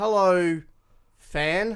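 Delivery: forced, unnatural delivery. Role-playing greeting a wrestling fan: unnatural stiff greeting. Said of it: "Doesn't feel very natural".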